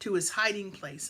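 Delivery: plain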